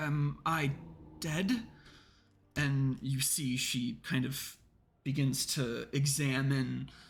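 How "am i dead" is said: stammered, halting, stumbling, broken-up words. Narrator voicing Minervina just restored to life, asking the players, Minervina, stammering. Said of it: "she stammers out".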